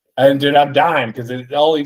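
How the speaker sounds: ordinary talk, nothing marked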